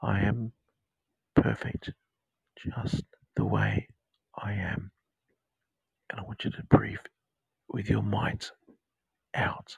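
intimate, close, in-your-ear whispery tone. Leading a guided meditation with affirmations: whispering. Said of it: "sound like I'm whispering in your ear".

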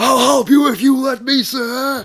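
very high, very loud, top-of-the-lungs shout. Retelling a line Worf said, Worf shouting at the top of his lungs. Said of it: "Worf shouting, ... close to the top of his lungs".

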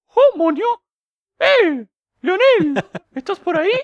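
very high, loud, squeaky, bouncy cartoon voice. Imagining a cartoon character calling out for Leonel, in a Mickey Mouse voice. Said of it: "con voz de Mickey Mouse y todo".

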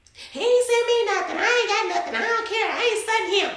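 very high, put-on voice of an upset woman. Asked to do the voice of a woman: imitating how she sounds. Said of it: "do the voice though? ... That's how she sounds".

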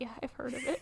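very hushed, quiet, timid little voice. Retelling a man's response when a woman described her period, imitating a timid reply. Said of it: "so timidly".

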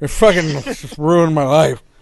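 put-on tipsy, drunk dad voice. Mocking how another speaker sounded: imitating a drunk dad. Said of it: "you sound like a drunk dad".

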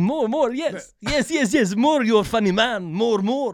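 amused, laughing through the words, encouraging tone. Retelling how Usyk laughed at a loud, obnoxious opponent: imitating Usyk laughing. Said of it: "Usyk's sitting there laughing at him, going".

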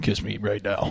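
very deep, quiet put-on talking-dog voice. Retelling how a dog at a guy's house talked to the speaker: super deep voice. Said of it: "in a super deep voice".

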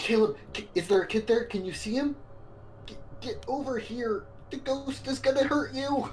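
very hurried whisper. A player's character urgently calls Caleb away from the ghost: very hurried whisper.

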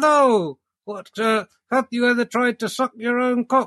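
ventriloquist dummy voice. Doing ventriloquism, having the dummy ask the questions in a ventriloquist dummy voice. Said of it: "I just have him ask all the questions?".

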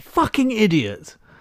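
acted, very high-pitched, fed-up, upset cursing outburst. Retelling cursing aloud in front of family and kids, re-enacting an upset outburst. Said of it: "why are you getting so upset?".

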